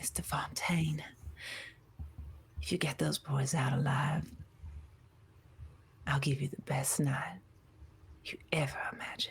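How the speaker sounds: hushed, barely voiced, soft, breathy whisper. Narrating a scene where a woman leans in for a kiss, whispering. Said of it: "She whispers as she's leaning in".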